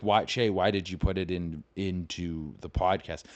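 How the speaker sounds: ordinary delivery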